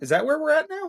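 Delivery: very high, squeaky voice cracking like puberty. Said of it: "my voice went up three octaves like I'm going through puberty".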